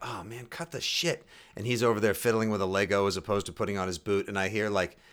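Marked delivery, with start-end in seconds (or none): 0.0-1.3 frustrated, fed-up grumbling mutter, half to oneself. Recalling walking away from a child fiddling with a Lego, retelling a frustrated mutter. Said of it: "I get frustrated and I walk away and I just say like".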